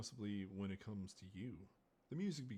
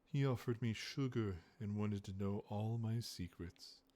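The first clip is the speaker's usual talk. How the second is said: raised, laid-on seductive voice; 7 dB louder than usual. The narrator leans close to her companion and does a seductive Finnick Odair imitation. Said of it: "I say in my best seductive voice".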